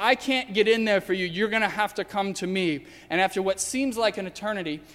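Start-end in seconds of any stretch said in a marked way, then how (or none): none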